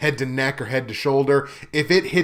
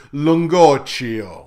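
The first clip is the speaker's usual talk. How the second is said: loud, over-the-top Italian pronunciation of Lungocchio; 5 dB louder than usual. Pronouncing a friend's last name, exaggerated Italian accent on Lungocchio. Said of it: "I'm just going to go super Italian and pronounce it".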